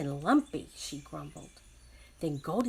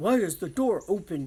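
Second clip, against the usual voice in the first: deep, gruff voice, boomed out; 5 dB louder than usual. Reading the three bears story, Daddy Bear finds the door open: deep, gruff Daddy Bear voice. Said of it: "Daddy Bear said in his deep, gruff voice".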